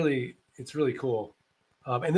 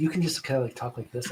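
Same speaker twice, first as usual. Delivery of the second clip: soft hushed voice, very quiet; 3 semitones lower, 5 dB quieter than usual. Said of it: "really quietly into your phone".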